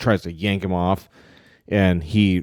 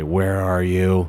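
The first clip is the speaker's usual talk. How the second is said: hushed whisper. Narrating a scene to players, a figure asks where they are, whispering. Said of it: "he whispers".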